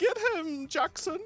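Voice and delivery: prissy, snooty aristocrat voice. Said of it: "like some, like, prissy noble".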